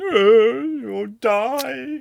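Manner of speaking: shrill, very high, very loud shout, "die" drawn out. Retelling how the battery warned about dying: imitating a shouting battery. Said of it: "just shouted at me going".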